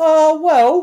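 very loud, high-pitched, belted exclamation. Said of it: "I always start off".

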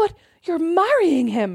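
put-on shocked, aghast little boy voice, high-pitched. Retelling what a child said at dinner: imitating an aghast child. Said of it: "William looks at me aghast and goes".

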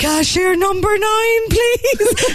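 strained, breathy, stressed, very high voice. The speaker imitates the voice calling cashier numbers, imitating a breathy, stressed voice. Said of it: "does she sound a bit stressed?".

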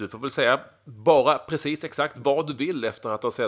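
usual speaking voice

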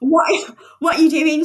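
put-on horrified scream. Retelling finding a man in their car's passenger seat, retelling a horrified scream.

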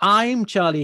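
I'm Charlie punched hard with heavy stress. Host introducing himself and this week's guest on the radio show, stress on I'm Charlie. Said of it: "there's a lot of emphasis on I'm Charlie".

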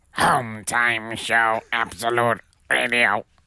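boxy sci-fi robot voice. Performing a robot voice for podcast listeners after being asked: robot voice. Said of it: "Close your eyes and here's a robot".

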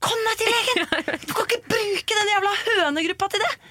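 high, provoked, fed-up, exasperated outburst. Retelling the speaker's reply to people asking a group for advice, retelling an exasperated reply. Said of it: "Jeg blir så provosert".

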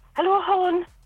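failed attempt at a Wexford accent. Asked whether they can do a Wexford accent, trying it in a bad Wexford accent. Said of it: "do you do a Wexford accent?".

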